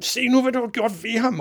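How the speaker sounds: raging, furious yell, very high-pitched. Narrator reads the father shouting about the TV announcer, furious shouting. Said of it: "råbte faren rasende".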